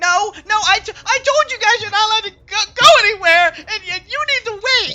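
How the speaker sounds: crying while shouting, tearful outburst. Voicing a child character who falls and starts crying: crying while shouting. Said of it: "starts crying, and he's like".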